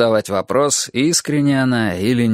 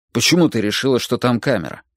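plain

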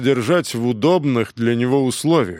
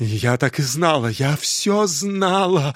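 shaky, trembling, quavering voice; 2 semitones higher than usual. A woman in a story speaking to the inspector, in a trembling voice. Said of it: "дрожащим голосом сказала она".

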